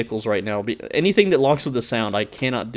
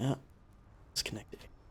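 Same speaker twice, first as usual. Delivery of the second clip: hushed, much quieter whisper; 19 dB quieter than usual. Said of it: "I don't know why I'm whispering".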